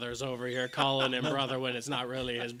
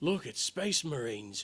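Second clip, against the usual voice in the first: gruff orky put-on voice. Imitating guards who spot Space Marines arriving: Orky voice. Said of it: "I went Orky".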